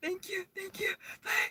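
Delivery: very high, embarrassed, flustered and hurried. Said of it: "So I said".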